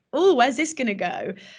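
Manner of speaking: ordinary delivery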